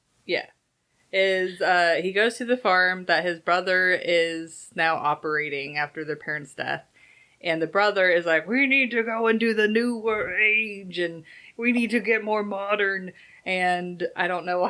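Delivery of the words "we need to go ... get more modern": put-on evil scientist character voice. Retelling what the brother in the story says, in an Arnold Schwarzenegger evil scientist voice. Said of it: "This is the evil scientist voice".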